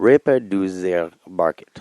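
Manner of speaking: odd, wrong-sounding accent on a German title. Trying to pronounce a german book title: weird accent. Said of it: "don't say it with a weird accent".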